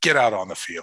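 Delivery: ordinary talk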